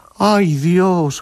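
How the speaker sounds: high, rising, shocked and dismayed gasp.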